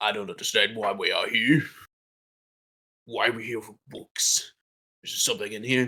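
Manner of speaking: whiny, grumbling, complaining orc creature voice. Narrating to players, voicing an orc in a weird Orcish dialect. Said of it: "the Orcish that you're hearing right now".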